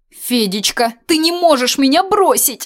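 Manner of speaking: high, loud crying out. A narrator reads Regina crying out to Fedechka, shouting. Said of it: "закричала Регина".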